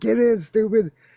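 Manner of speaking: urgent, frightened, high, loud yell. Retelling how a scared man yelled at him to get in the car, retelling a yell. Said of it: "He's like yelling at me".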